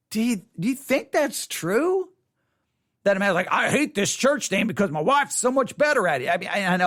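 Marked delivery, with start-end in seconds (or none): 3.5-6.3 fake, put-on Southern US accent. Imitating a man who dislikes church because his wife is better: put-on southern accent. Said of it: "I keep trying to use, like, a Southern accent".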